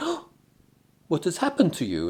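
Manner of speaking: high, swooping put-on Polish accent. Retelling what Magda, on duty, said on seeing the speaker, Polish accent. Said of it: "in a Polish accent".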